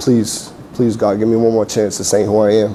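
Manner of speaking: normal talking voice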